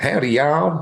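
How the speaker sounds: rough attempt at Texan accent. Answering a request to do a texas accent: texas accent. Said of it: "Can you do a Texas accent".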